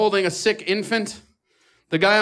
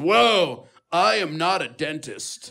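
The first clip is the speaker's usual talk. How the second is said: slow, chill, laid-back surfer-dude drawl; 3 semitones lower than usual. Retelling what an emergency doctor said: imitating a surfer dude. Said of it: "he is talking to me like a surfer".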